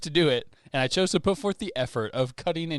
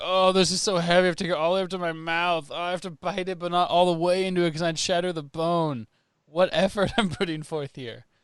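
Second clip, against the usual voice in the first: jokey, teasing, mocking put-on voice, pitched up; 5 semitones higher than usual. Acting out a silent video of eating chicken wings: mockingly, as a joke. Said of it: "me mockingly being like".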